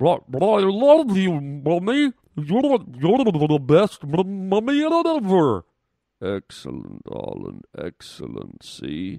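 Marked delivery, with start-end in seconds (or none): 0.0-5.6 put-on bubbling underwater baby voice, higher and louder. Saying a line to the doctor again, as a baby underwater: underwater water baby voice. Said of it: "Just pretend you're underwater".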